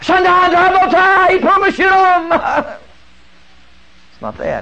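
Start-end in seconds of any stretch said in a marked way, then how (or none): 0.0-2.8 frenzied put-on gibberish, much higher. Mocking someone worked into a sweat speaking nonsense, frenzied mock gibberish. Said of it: "somebody getting all wild-eyed, working up a sweat".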